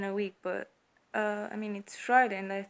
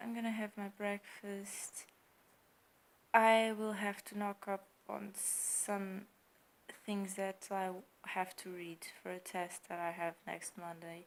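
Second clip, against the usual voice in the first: sleepy flat monotone, quieter; 8 dB quieter than usual. Talking to viewers while very tired, in a sleepy, flat voice. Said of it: "I sound very like sleepy, without any emotion".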